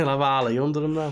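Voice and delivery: put-on Liverpool Scouse accent. Repeating the other speaker's line to show how it sounds, Scouse accent. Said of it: "like with a Scouse accent".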